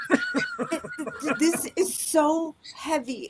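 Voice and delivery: slow, swooping, stammering, about-to-cry voice. Mocking how some people speak to win sympathy: imitating someone about to cry. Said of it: "they start to talk like they're going to cry".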